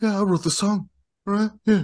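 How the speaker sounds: wispy, very high-pitched voice. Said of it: "He's just very like wispy".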